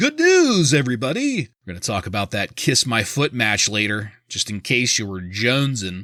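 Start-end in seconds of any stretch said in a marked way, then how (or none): 0.0-1.4 way-up-high put-on voice. Repeating your own announcement to everybody, this time in the Farnsworth voice. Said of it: "the Farnsworth voice".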